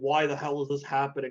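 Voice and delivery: ordinary talk, nothing marked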